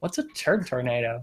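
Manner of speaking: put-on Valley girl voice and inflection. Retelling a news story, quoting a woman's question, Valley girl voice. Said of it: "I don't know why she's a Valley girl now".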